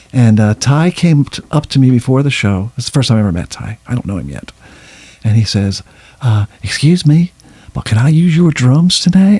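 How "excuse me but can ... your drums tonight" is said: put-on really thick Mississippi accent, pitched up. Retelling a drummer asking him before a show, in Ty's thick Mississippi accent. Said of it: "Really thick Mississippi accent".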